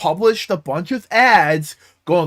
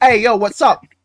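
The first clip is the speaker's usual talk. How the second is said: put-on broad, heavy, thick Brooklyn accent; 3 semitones higher, 4 dB louder than usual. Retelling a character who suddenly starts talking, in a thick Brooklyn accent. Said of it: "in the most Brooklyn ass accent just starts talking".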